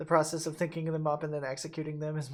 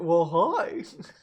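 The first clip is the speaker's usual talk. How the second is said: goofy, silly voice, louder; 9 dB louder than usual. Showing how a goofier version of the greeting would sound: goofy voice.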